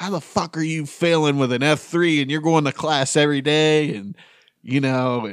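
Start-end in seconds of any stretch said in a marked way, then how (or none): 0.0-4.0 mock father voice, high, angry, flipping out, yelling. Retelling dad flipping out over a mid report card, imitating dad yelling. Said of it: "He's yelling at me".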